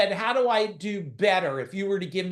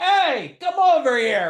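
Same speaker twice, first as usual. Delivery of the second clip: put-on loud, pitched-up, old-school Italian yell; 7 semitones higher, 8 dB louder than usual. Speaker tells an online audience about old-school Italians, imitating their yell. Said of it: "We we just yell".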